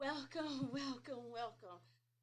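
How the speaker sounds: breathless, winded, out of breath. Opening an episode of Faith, Family, and Finance, out of breath. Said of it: "I need to catch my breath".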